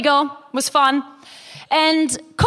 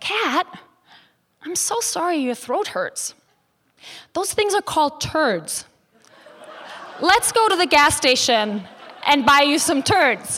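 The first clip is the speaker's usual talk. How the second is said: completely sincere, earnest, caring tone. Retelling a friend's prank reply about a sore throat: imitating Sage, in all sincerity. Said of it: "in all sincerity".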